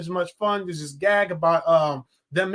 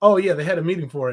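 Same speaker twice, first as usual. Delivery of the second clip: put-on sarcastic talking dog voice; 2 semitones lower, 3 dB louder than usual. Retelling a cartoon scene, mocking a friend: imitating Brian being sarcastic. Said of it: "Brian was just, like, sarcastic".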